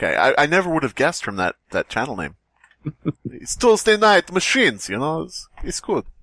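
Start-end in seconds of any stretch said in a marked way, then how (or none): 3.3-6.0 put-on Russian accent, pitched up. Saying a channel's name as its host might, in a put-on accent that sounds russian. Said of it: "that was more Russian".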